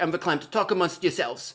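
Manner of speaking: put-on high, sad old-lady voice. Recalling an old SNL skit's talk show host, mock-sad Linda Richman impression. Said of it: "and then he'd be like".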